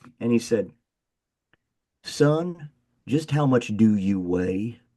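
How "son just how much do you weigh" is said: put-on slow, drawling Southern Indiana accent. Speaker quoting a coach asking him a question, in a Southern Indiana accent. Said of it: "he had this Southern Indiana accent".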